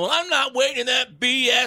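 yelling in a very high voice. Telling how a man who slipped into line went off on him: retelling a man yelling. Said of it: "he starts yelling".

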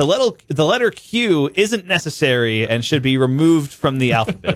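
ordinary talk, nothing marked

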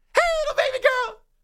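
very high, cartoonish voice, pitched way up. Imitating a serious man suddenly talking to a baby girl, Mickey Mouse voice. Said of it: "it's like the Mickey Mouse voice".

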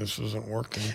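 low, very quiet mutter, barely audible. Retelling what you said while a man tried to hypnotize you: under the breath. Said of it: "under my breath".

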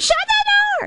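squealing, very high-pitched squeal. Retelling squealing as a tween when mom opened the door, retelling a squeal. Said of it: "that I was squealed".

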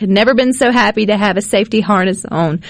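ordinary delivery

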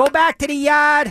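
put-on Boston accent. Joking about heckling Tommy, the speaker does a heckle in a put-on Boston accent. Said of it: "I should do a Boston accent".

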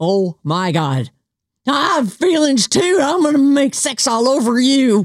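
high, drawn-out, off-kilter crazy voice. Recommending The Righteous Gemstones to listeners, doing a Judy impersonation. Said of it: "That's my Judy impersonation".

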